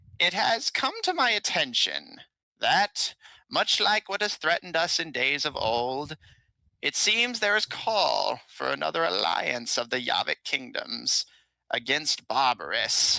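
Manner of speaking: feeble, frail, thin little voice. The storyteller voices the king addressing a crowd of armed bandits; frail little voice. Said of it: "he speaks up in his frail little little voice".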